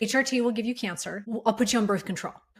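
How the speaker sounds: ordinary delivery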